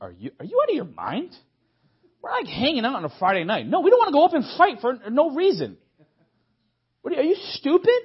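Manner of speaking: mock incredulous laughing scoff, very high and loud. The speaker retells how he and another man laughed at critics, retelling laughing disbelief. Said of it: "me and Jeremiah looking at them laughing".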